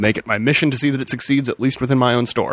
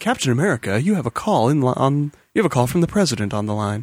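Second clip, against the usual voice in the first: PA announcer voice, like an office intercom. Retelling how a character sounded, like an announcement over a pa speaker. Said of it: "like an announcement over a P A speaker".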